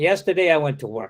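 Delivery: fast delivery, falling end on "work". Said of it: "Final falling intonation".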